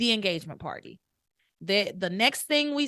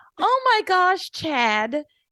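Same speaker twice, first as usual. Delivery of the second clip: put-on gushing girl voice, higher and louder; 10 semitones higher, 7 dB louder than usual. Retelling a scene where a character bounds in: imitating Simone bouncing in excitedly. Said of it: "Simone comes bouncing around the corner like".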